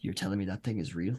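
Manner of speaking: muttered under the breath. Voicing a character who gets close to Lapis: muttered under his breath. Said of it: "under his breath".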